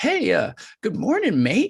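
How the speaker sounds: cheery put-on British accent, very high pitch. Retell how he came up beside you in a whiteout, imitating a chipper British accent. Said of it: "in his British accent".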